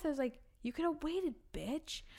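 muttered under breath. Retelling a reply to a customer who grabbed a banana, muttered under breath. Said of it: "I literally said under my breath".

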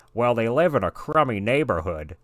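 big animated cartoon voice, pitch swinging widely around. Reading a Family Guy script aloud as Peter: Peter Griffin voice. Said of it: "I was not sure if you were just playing a clip or not".

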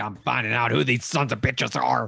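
ranting, broadcaster-style host voice. Retelling how another person does a bit, in an Alex Jones voice. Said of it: "puts his Alex Jones voice on".

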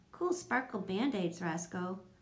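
plain

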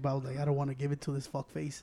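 hushed whisper. Telling a story about someone he watched in a car, whispering. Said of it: "I don't know why I'm whispering".

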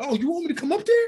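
mock, very high, loud screaming. Recounting a cut film scene where they screamed at someone: retelling a scream. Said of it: "I screamed".

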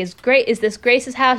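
normal talking voice

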